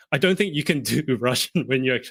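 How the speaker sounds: normal talking voice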